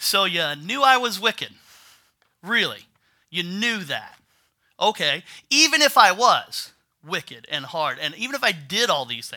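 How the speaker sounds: loud, swooping, lightly sarcastic put-on voice. Acting out the master's reply to the lazy servant: acting out a sarcastic reply. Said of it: "kinda being a little sarcastic here".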